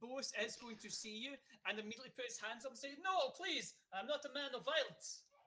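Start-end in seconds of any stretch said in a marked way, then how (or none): 3.0-5.2 put-on high, slow speech in a Russian accent. Narrating a scene, a man puts his hands up as a gun rises: Bose's Russian accent. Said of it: "he's got a Russian accent".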